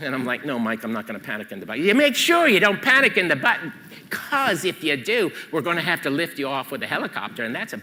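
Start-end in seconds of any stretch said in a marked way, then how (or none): 1.8-7.8 poor, fake put-on English accent. Speaker does an exaggerated accent while retelling what a coworker told him before a climb. Bad English accent. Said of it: "I'm going to do a bad English accent".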